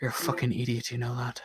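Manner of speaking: hushed stage half-whisper. Leaning over as he sits down beside you, speaking into his ear, half-whispering. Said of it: "just like whisper in his ear".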